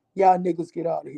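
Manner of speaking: dropped into a deep man voice. Retelling a video where she turned on guys behind her: imitating Kendra G's deep man voice. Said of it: "used her man voice, the deep voice".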